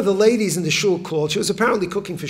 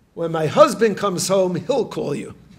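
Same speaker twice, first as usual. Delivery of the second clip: plain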